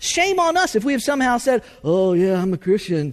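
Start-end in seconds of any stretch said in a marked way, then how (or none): 1.8-3.1 badly done, lifeless, dull put-on voice.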